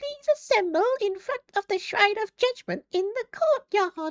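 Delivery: very high, loud character voice. Imitating how the game's announcer voice sounds: game's Monokuma voice. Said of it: "whatever the fuck his voice sounds like".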